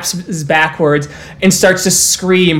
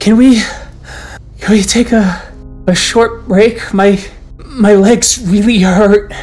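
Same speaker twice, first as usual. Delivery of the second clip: small mousy voice, higher; 4 semitones higher than usual. One of the kinfolk, afraid of their relatives, peeps up in an almost mouse-ish voice. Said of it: "peeps up with an almost mouse-ish voice".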